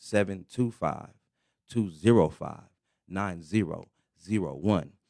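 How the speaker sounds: slow, deliberate, each word carefully spaced out. Radio host repeating the call-in number for listeners, slower. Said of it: "Let me say it a little slower".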